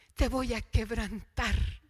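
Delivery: very soft, gentle, low hushed voice. Retelling what the Lord suddenly said to him, retelling a very soft voice. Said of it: "con una voz muy suave".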